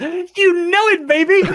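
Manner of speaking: shrill, very high, loud, drawn-out scream. Imagining a friend answering during an apocalypse: mock screaming. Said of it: "one of you screams".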